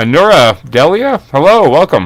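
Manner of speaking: talking through a full mouth. Greeting someone by name, talking with a mouthful of donut. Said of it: "I'm sitting here with a mouthful of donut".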